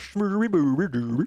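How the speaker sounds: high-pitched nonsense babble in fake Swedish. Answering what a Viking sounds like: Swedish Chef voice. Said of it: "did the Swedish chef, uh, voice".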